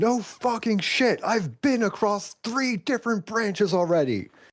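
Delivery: yelling, very high-pitched and shrill. Voicing a character answering a gunwoman: yelling back. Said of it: "Hallow yells back".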